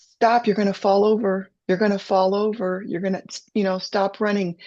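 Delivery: called out, urgent but easygoing, fatherly tone. Retelling a childhood run to the lake, imitating dad yelling a warning. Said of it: "my dad was yelling at me".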